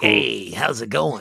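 put-on cool radio host voice. Asked why the hosts lack cool radio voices, demonstrating a cool radio DJ voice. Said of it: "cool radio voices like Wolfman Jack".

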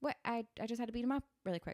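mock casual, offhand delivery. Retelling a boyfriend's line after a beating: imitating a casual, offhand tone. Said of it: "totally normalizing what he just did".

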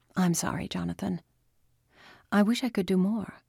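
softened, gentler tone, speaking softly. A doctor, after saying she'll adjust Jonathan's meds, speaks to him in a softened voice. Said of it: "The doctor's voice softened".

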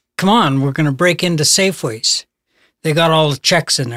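ordinary delivery

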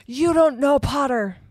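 shrill, loud, screeching shriek. A man cuts in after another man's rebuke, shrieking. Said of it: "shrieked Snape".

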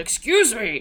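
mock blunt demanding tone. Describing how a man would use the voice, imitating a blunt command. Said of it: "this is how a man would use the voice".

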